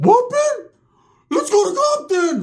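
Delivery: very high, loud, squeaky serious voice. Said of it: "He's being all serious".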